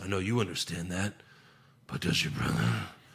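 low, rough, gravelly voice. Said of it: "Just grovelly voice, can't understand him".

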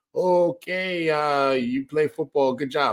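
terrible, slow, put-on London accent. Imitating how London reacts to football: terrible London accent. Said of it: "that's a terrible London accent".

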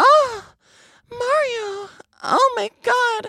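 very high drawn-out moan. Imitating Peach calling from the castle top: moaning Princess Peach voice. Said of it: "all Peach does is moan and complain".

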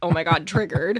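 mock panicked freaking out. Acting out a giraffe survivor driving past a car dealership: mock panic as giraffe survivor. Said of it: "a giraffe survivor driving by a Toyota dealership and being like".

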